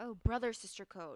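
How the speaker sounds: ordinary talk, nothing marked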